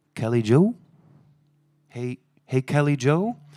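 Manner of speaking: put-on drawn-out calling out. Retelling hearing someone call a name outside the bus: imitating a faint voice calling. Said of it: "faint voice going".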